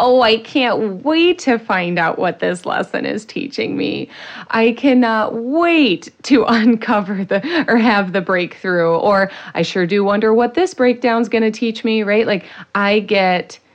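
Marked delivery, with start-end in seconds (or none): 0.0-12.0 playful, sarcastic delivery. Acting out own reaction to a setback: imitating own sarcastic tone. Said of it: "I get a little sarcastic".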